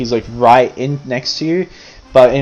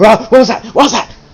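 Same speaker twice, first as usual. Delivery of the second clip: very high, fast, frantic, startled panicked voice; 9 semitones higher, 4 dB louder than usual. Voicing a caged dwarf waking violently: dwarf freaking out. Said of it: "he's like".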